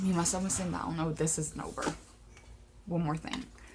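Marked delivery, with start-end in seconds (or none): none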